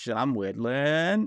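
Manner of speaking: put-on Maine accent, New England speech. Speaker tries the Maine accent, asking the other speaker if it's close; imitating a Maine accent. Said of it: "My only experience with the Maine accent is".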